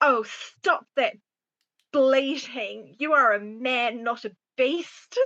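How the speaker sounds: severe, very stern, reproving rebuke. Voicing a character scolding a raving man: very stern scolding. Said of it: "very stern and be like".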